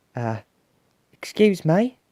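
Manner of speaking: very loud tiny piping voice. Basil looks back at everyone, then speaks to the monster in a very small voice. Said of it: "in a very small voice".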